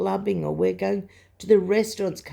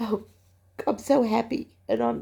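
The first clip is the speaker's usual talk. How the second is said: crying, tearful, voice breaking; 3 semitones higher than usual. Speaker describes remembering a smile, speaking while crying. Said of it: "I'm crying".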